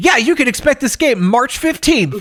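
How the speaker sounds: upbeat announcer voice. Imitating a Nintendo Direct announcer announcing a release date: mock announcer voice. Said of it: "the announcer goes from".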